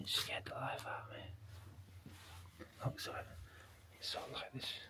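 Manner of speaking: soft, hushed whisper. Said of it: "I'm whispering 'cause it's really quiet".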